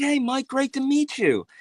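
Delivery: clumsy, very high-pitched put-on voice. Retelling meeting him and shaking hands, doing a bad Paul impression. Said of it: "I'm gonna do a bad Paul impression".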